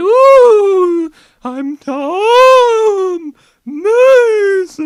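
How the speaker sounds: very high, very slow, wailing spooky ghost voice. Explaining his soul wouldn't come out speaking like this, doing a spooky ghost voice. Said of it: "my soul don't come out me going".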